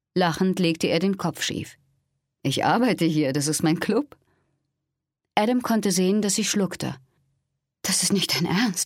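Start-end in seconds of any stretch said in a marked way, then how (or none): 7.8-8.8 hushed whisper. A woman answers after he says the club is his, whispering. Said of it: "flüsterte sie".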